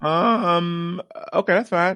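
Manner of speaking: voice cracking, breaking up very high. Told he has to go last for being late, voice cracking. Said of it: "I don't know why my voice cracked like that".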